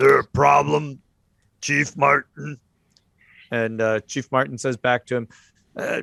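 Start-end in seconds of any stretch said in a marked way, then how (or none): 0.0-2.6 imposing, hard-jawed bruiser voice. A man questions the chief, spoken in a deep voice. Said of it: "this deep voice".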